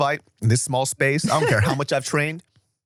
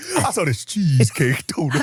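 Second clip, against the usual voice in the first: mocking fat guy voice; 2 semitones higher than usual. Imitating the other speaker's donut line: imitating a fat guy voice. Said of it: "you gotta play that back".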